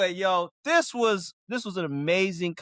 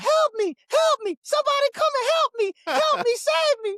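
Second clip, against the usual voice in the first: very high, loud, desperate shrieking screams; 5 dB louder than usual. Retelling what he screamed out while gaming, imitating someone screaming for help. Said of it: "He was screaming out".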